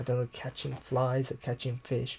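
ordinary talk, nothing marked

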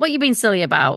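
usual speaking voice

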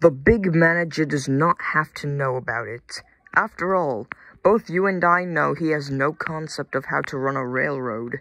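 plain reading voice

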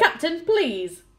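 curt and sharp. The first officer interrupts the captain, speaking sharply. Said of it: "the first officer said sharply".

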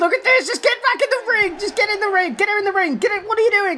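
high, frantic, pleading commentator voice.

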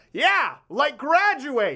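mock blurted shout, high and swooping, yelled. Retelling what the speaker's dad yelled out while watching Vin Diesel: retelling dad's yell. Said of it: "And my dad yelled out".

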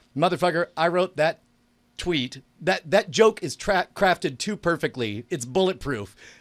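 plain

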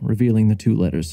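ordinary delivery, nothing marked

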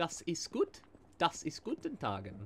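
fake German accent, animated, gibberish. Reacting to a fortunate spot, speaking gibberish in a put-on German accent. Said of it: "Just speaking gibberish in a German accent".

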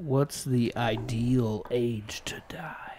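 slow, soft whisper.

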